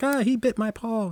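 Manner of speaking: mock very high, drawn-out sobbing cry. Retelling how the lion reacted after the bite: imitating the lion crying.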